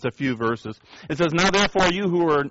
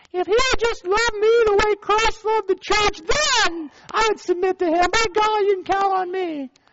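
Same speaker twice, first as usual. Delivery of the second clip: very high, put-on, squeaky girly voice. Speaker voicing the wife's side, in a put-on girl voice. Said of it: "Let me get my girl voice".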